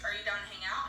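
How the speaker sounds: ordinary delivery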